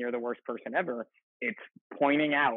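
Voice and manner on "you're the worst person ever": usual speaking voice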